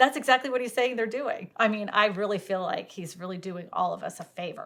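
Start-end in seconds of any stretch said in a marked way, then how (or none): 1.9-4.7 dry, flat, deadpan sarcasm. Commenting on a company's build-to-rent plan: sarcastic. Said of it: "Insert sarcasm".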